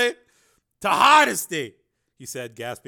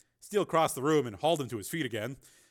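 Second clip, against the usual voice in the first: ordinary delivery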